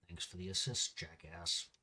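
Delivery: very low, hushed mutter under the breath. Voicing Crash's line as he mutters very softly under his breath. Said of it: "will mutter very softly under his breath".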